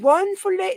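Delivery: very high, loud, put-on British accent. After announcing the voice and checking the listener is ready, do Paul's voice. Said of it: "I'm going to do Paul's voice".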